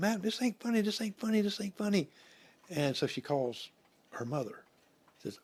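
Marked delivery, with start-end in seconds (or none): 0.0-2.1 high, pitched-up hollering, repeated. Retelling a woman hollering in a graveyard, imitating someone hollering. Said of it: "She's hollering".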